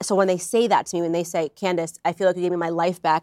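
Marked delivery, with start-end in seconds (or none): none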